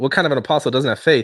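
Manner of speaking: usual speaking voice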